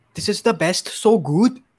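attempted Irish accent. In an accent-guessing game, speaker says a line in an attempted irish accent. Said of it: "It's Irish".

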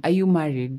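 ordinary delivery

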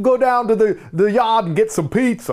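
put-on Boston accent. Showing the other speaker how she talks; Boston accent. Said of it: "Do your Boston accent".

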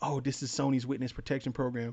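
put-on whisper. Retelling a fan-imagined movie scene: Deadpool whispering. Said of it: "Deadpool whispers to Ken".

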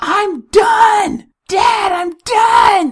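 put-on very high, loud child's yell. A dad retells his daughter waking him up: retelling daughter's yell. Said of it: "daughter yelling".

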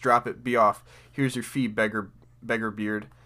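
ordinary talk, nothing marked

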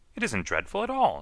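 somewhat indignant tone. Narrator reads a character answering a gasping rose, somewhat indignant. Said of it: "somewhat indignant".

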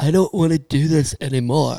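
put-on male voice in valley-girl style. Imitating a drunk man throwing his trophy overboard: Keanu Reeves impression. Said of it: "That's my Keanu".

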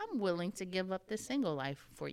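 ordinary delivery

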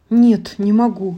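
hoarse rasp. The hunter, knife raised over the princess, suddenly falters: rasped. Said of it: "прохрипел он".

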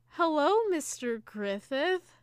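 lovestruck, taken-aback tone. Describing a woman greeting Mr. Griffith on screen, imitating a lovestruck greeting. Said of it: "it almost sounded like she was, like, in love with him".

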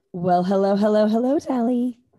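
low, sultry put-on radio dj voice. Opening a podcast and greeting the co-host in a radio DJ voice. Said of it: "That was my radio DJ voice".

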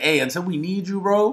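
normal talking voice

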